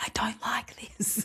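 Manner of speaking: hushed, barely voiced whisper. Retelling a phone call to mum about young kids: imitating a whisper. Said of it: "I had to whisper it on the phone".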